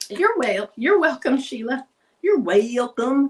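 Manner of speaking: Arkansas accent coming through. Thanking someone while measuring during a craft tutorial, Arkansas accent slipping out. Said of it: "Got my old Arkansas accent sneaking back out".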